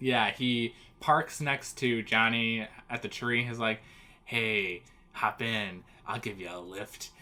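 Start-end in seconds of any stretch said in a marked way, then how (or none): 4.2-7.1 hushed, soft, gross, sleazy, creepy voice. Recapping a cartoon episode, doing Speed Buggy offering a lift in a gross voice. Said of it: "He sounded so gross".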